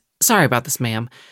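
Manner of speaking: whispering softly. Voicing a character apologizing to Convenience while running past: quiet whisper. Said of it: "just quietly whisper to Convenience".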